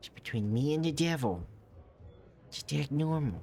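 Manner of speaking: high, dorky, nerdy loser-type voice. Voicing a cultist pushing a heavy cart: loser voice. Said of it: "I'm trying to sound like a loser".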